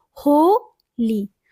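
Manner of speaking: holi stressed on first syllable ho, li weak. Explaining strong and weak syllables, stress the first syllable of holi. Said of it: "तो जो first है वो क्या है, strong है".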